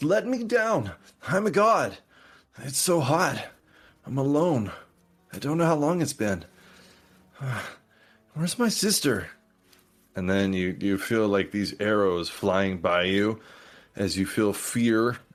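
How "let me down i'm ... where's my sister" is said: put-on young, high, swooping voice. Narrator voices a trapped winged creature calling out, young voice. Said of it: "you hear this young voice".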